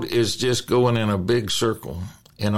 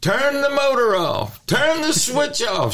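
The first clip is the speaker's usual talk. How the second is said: mock very high, urgent hollering. Recounting calling to her in the boat to turn the motor off, retold hollering. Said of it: "and I'm hollering".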